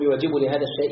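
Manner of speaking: ordinary talk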